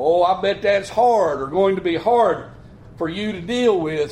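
ordinary delivery

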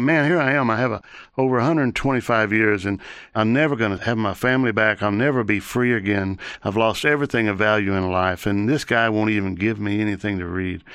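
plain

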